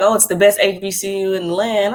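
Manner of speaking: normal talking voice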